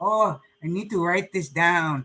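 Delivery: little Spanish accent, gently done, put-on. Showing listeners what Tanya often says, try to do it in Tanya's Spanish accent, put on. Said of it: "I'm trying to do my little Tanya Spanish accent".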